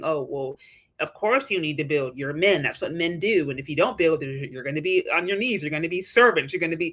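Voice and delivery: mock minimizing, dismissive, shaming, disapproving tone. Retelling a woman's comment on men building: imitating a shaming tone. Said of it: "the shaming tone".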